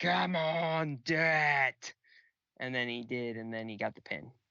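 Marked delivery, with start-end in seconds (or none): 0.0-1.9 screaming, a bit louder. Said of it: "Dane was screaming at him".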